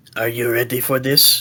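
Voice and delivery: put-on speaking with a French accent. Voicing a character who asks a player if they're ready: french accent. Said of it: "a familiar voice with a French accent".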